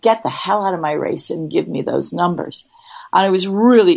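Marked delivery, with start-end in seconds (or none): none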